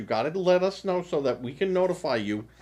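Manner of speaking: usual speaking voice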